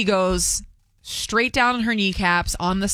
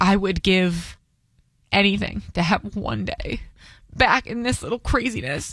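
crying, words breaking mid-phrase, halting. Retelling what a man with grown children told the speaker, while crying. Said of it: "Why am I crying?".

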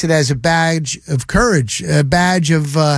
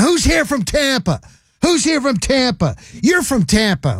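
high-pitched hollering yell; 7 semitones higher than usual. Speaker retells a young Eagles fan yelling at them outside the stadium: retelling a fan's yell. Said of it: "he started yelling".

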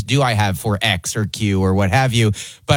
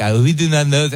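mock French accent, slower; 3 semitones higher than usual. Speaker retells French guys' reply after his stage bit, imitating French guys' accent. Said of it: "these French guys were like".

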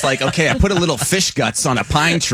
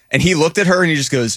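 plain

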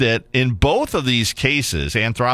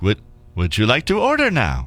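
automated computer voice. Describing a drive-thru ordering system to the other speaker, Popeyes drive-thru AI voice. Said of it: "it's an automated AI thing. With the whole voice".

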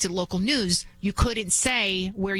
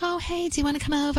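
chirpy, cartoon princess-style voice; 7 semitones higher than usual. Recalling a girl named Liz inviting the speaker over: imitating Liz's Disney-princess voice. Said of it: "she would talk like a Disney princess".

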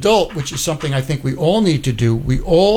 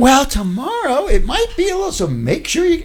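very high, condescending, talking-down voice; 12 semitones higher than usual. Mocking a woman meteorologist's forecast, mimicking talking down to kids. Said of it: "she's talking to us like we're 7 years old".

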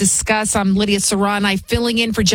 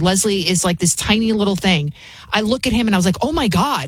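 ordinary delivery

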